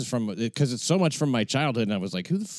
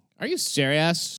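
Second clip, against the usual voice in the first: put-on high Valley Girl accent, full intonation; 7 semitones higher than usual. Repeating a young woman's reply from the other speaker's story, in a valley girl accent. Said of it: "A Valley Girl accent".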